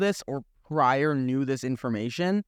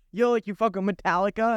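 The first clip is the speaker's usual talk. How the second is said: ordinary talk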